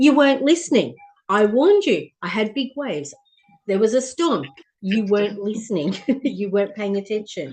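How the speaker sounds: really sassy, cheeky know-it-all tone. Retelling what the ocean answered in a session: sassy tone, voicing the ocean. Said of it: "this really sassy tone".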